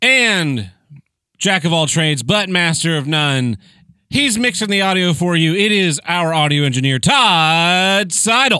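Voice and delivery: game show host announcer voice, drawn-out Todd. Podcast host introducing the audio engineer to listeners, in a game show host voice. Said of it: "I like your game show voice".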